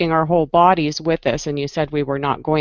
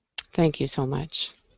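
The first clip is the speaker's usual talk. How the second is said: disappointed, lower and quieter; 2 semitones lower, 8 dB quieter than usual. Thanking someone after hearing their answer, disappointed. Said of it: "I hear the disappointment in your voice".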